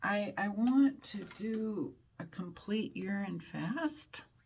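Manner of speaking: voice cracking and breaking mid-line. Speaker describing a plan, voice cracking. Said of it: "My voice kind of cracked on that one".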